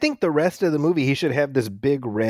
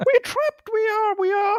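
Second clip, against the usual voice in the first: put-on British actress voice, higher. Joking how the scene would go with this actress: Keira Knightley voice. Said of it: "If it was Keira Knightley".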